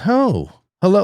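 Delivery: very high-pitched, smug little crime-boss voice. Retelling a child greeting him from a swivel chair: imitating a child playing kingpin. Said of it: "like she's some kind of a kingpin".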